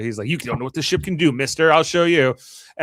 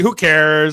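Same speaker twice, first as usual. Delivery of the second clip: loud, bored, utterly uninterested, careless dismissive tone; 2 semitones higher, 5 dB louder than usual. Retelling a scene where Q answers a status request: imitating bored Q. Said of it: "And Q is so bored by the whole thing".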